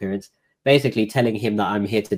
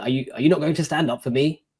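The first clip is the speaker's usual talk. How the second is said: put-on angry, frustrated voice, much higher; 6 semitones higher than usual. Retelling what the judge said when the speaker stayed seated in court: retelling an angry judge. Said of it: "quite angrily, like frustrated".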